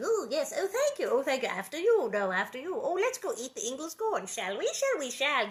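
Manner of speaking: little cartoon critter chatter. Describing how the striped gophers in the corn sound: Chip and Dale voice. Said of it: "They sound like the little cartoon ones going".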